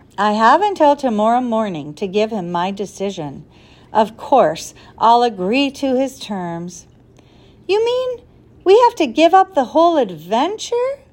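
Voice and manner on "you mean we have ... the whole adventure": horrified, appalled, high-pitched. Reading a story aloud, voicing Ben's question in a horrified voice. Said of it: "Ben asked in a horrified voice".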